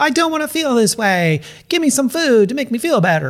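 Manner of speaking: put-on very high, silly, funny toddler voice. Speaker acts out our toddler reaction to emotions, saying it in a funny way. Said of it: "I'm kind of like saying it funnily".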